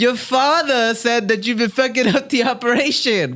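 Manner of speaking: put-on high-pitched, poorly done Irish accent. Joking about an upcoming fight, mimicking the fighter Conor: bad Conor McGregor impression. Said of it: "We have the worst Conor impressions".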